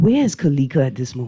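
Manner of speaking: whispering. Asking another speaker a very important question on air: whispering. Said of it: "I go whisper it".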